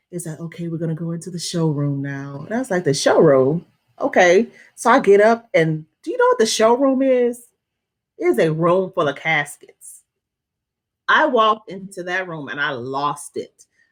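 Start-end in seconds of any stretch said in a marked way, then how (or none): 0.1-2.4 soft, calm, eerie funeral director voice. Telling a story about a funeral director, imitating his calm, eerie funeral director voice. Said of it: "this calm, eerie voice".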